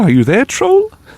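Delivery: tiny, squeaky, very high little voice. Recalling knocking on a bridge to call out for a troll, in a tiny voice. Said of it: "say in a tiny voice".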